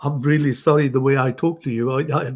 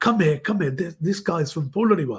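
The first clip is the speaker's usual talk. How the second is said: loud, shouting, calling-out voice; 3 semitones higher than usual. Retelling how a man called his uncle over: imitating someone shouting. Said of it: "he started shouting to him".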